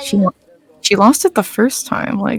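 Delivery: quiet muttering under the breath. Muttering in character to Misty about another player: muttering quietly. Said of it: "mutter to, to Misty".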